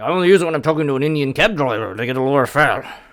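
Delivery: put-on Irish-accented voice. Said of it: "That's exactly what he said".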